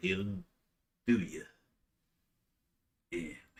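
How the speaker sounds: creepy, menacing gangster-style voice. Reading a game character's warning line aloud: creepy mobster voice. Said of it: "Tell me how you would read that".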